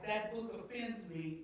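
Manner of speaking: usual speaking voice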